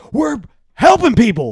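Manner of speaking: sudden put-on yelling at full volume. Retelling how a speaker yells during a speech: imitating Joe screaming. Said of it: "he'll start screaming about an issue like".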